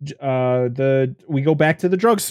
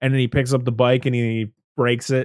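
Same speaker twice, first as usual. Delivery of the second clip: ordinary delivery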